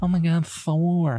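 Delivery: slow, drawn-out, dreamy, lovestruck swooning voice. Mocking a film character who is hot for Thor: imitating Natalie Portman swooning. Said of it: "she's just like".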